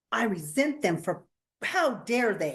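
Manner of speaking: ordinary talk, nothing marked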